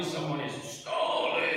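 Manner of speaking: ordinary delivery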